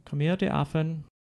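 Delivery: put-on English accent. Trying out how the line would sound: English accent. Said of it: "if they said it in an English accent".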